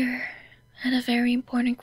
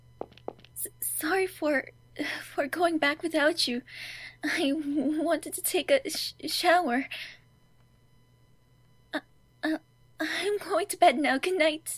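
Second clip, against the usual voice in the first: teary, tearful voice, halting and stammering; 4 semitones higher than usual. Apologizing for going back without the other, then saying good night: tearful. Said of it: "Why were you crying?".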